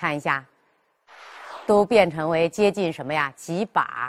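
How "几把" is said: 几 rising toward yangping, like second tone. Explaining the tone change in 几把: rising tone on 几. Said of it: "几变成什么？阳，接近阳平调了".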